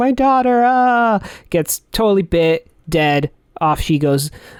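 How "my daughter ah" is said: mock, high, anguished screaming cry. Recapping a scene from a story, retelling a mother's scream. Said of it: "Helen's just screaming".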